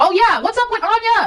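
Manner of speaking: loud, high-pitched yelling. Speaking to an audience, the speaker raises a question, yelling. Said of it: "I know I'm yelling".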